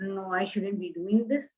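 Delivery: tiny, low, soft voice full of timid doubt.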